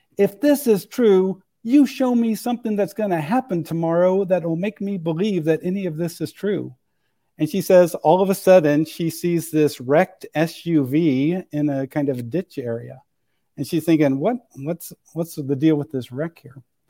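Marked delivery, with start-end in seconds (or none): 0.2-6.8 play-acted heated, furious, pitched-up angry voice. Retelling how a woman got pissed off and shouted out, imitating an angry shout. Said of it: "she gets totally pissed off and she shouts out".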